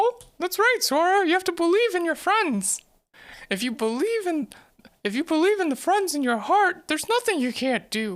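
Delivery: silly, high, squeaky cartoon mouse voice. Speaker doing the stupid Mickey Mouse voice, talking to Sora. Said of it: "the stupid Mickey Mouse voice".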